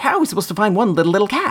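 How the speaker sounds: quick, high rattling speech. Describing an early version of a character, the speaker does Dale voice, fast and quick. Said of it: "he talks so fast and quick".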